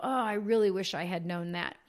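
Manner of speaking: ordinary talk, nothing marked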